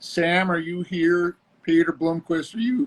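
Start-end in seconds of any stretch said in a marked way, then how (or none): 1.6-2.9 voice breaking in the middle of a word. Calling out to ask if someone else has joined, voice cracking. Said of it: "why is my voice cracking?".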